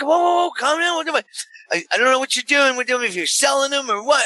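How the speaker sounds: high, heated argumentative shout. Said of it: "So now we're screaming at each other".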